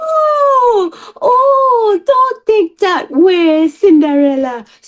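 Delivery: put-on very high old-lady Jamaican accent, drawn-out "oh". Recalling a line they spoke in a play, in a jamaican grandma accent. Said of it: "So I was this like Jamaican accent".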